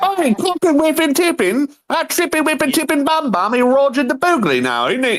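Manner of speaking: put-on very high, rattled-off gibberish in a British accent. Imitating game characters whose British speech was hard to understand: imitating British gibberish. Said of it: "I wasn't British, so I couldn't understand".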